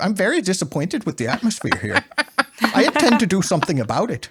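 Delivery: put-on strong, obvious, laid-on Canadian accent. Recounting interactions with Mister Harrison, imitating Mister Harrison's Canadian accent. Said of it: "He had a very Canadian accent".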